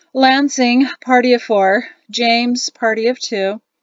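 bored, uninterested, offhand tone. A narrator reads an older man with a board announcing waiting parties, bored tone. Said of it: "announced in a sufficiently bored tone".

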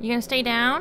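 loud, high taunting yell.

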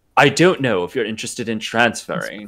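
extremely fake put-on British accent. Voicing Charles Xavier inviting a student to transfer: fake British accent as Charles Xavier. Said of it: "I wanna hear your fakest fucking British accent".

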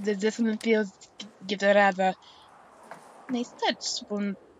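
clumsy, bad put-on French accent. Taking the role of France in a group scene, bad French accent. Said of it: "I can't be French".

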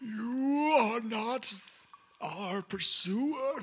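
high-pitched, slow, eerie, mysterious voice.

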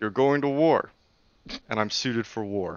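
soft, masculine dude voice. Answering in a character's voice after being asked what is going on, sounding like a dude. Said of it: "You sound like a dude this time".

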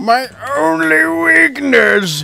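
wailing, crying out in pain. Voicing a dying monster in a story: wailing in pain. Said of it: "It wails out in pain".

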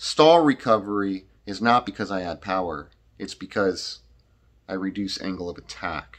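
slow, deliberate, each point laid down. Repeating a point to the listener a second time, said slower. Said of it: "say it slower".

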